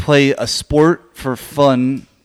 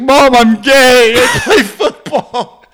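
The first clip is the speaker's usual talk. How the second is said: put-on tearful crying voice, higher and louder; 12 semitones higher, 5 dB louder than usual. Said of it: "he's, like, crying".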